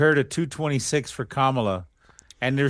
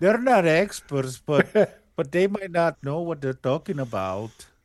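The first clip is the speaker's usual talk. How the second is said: put-on cartoon mouse voice, Mexican accent, higher and faster; 3 semitones higher than usual. Voicing a bit about Fox, in a Looney Tunes Mexican mouse accent. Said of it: "You sound like that Mexican mouse guy".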